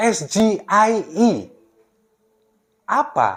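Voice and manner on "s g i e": S G I E said as English letter names, very slow. Spelling out the acronym SGIE as it should be asked, with English pronunciation of letters. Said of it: "Harusnya dia menanyakan dengan logat bahasa Inggris".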